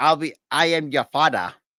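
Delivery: slow, Nigerian-accented speech. After others say Timmy looks like a Nigerian Darth Vader, speaker does a Nigerian Darth Vader voice. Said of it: "This is how he would say it".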